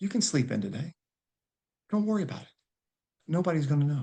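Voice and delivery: faint whispered voice. Acting out the inner voice telling him to sleep in, soft whisper. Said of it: "It's a whisper".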